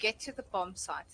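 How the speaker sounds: ordinary talk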